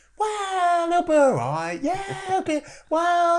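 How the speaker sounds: very high, drawn-out, self-persuading delivery. Showing how you talk yourself into a decision: self-persuading voice. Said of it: "you use this voice".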